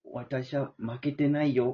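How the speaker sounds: cartoon character voice. Last in a round of anime character impressions, a Chibi Maruko-chan impression. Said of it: "チビマルコちゃん".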